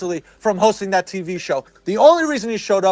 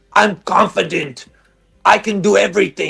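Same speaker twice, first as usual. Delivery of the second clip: put-on taunting, bragging seven-year-old voice. Mocking someone who wants to sound deep: mocking imitation, like a seven-year-old. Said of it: "You just sound like a, a, a, a seven-year-old".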